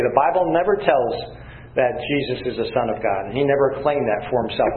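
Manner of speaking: ordinary delivery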